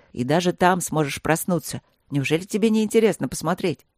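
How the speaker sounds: ordinary delivery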